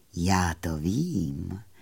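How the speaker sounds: very low, hushed, rustling murmur. The kindly moon in a fairy tale answering a sad little fairy, rustling in a quiet voice. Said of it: "zaševelil měsíc tichým hlasem".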